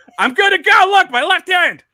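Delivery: keen, loud, high-pitched begging tone.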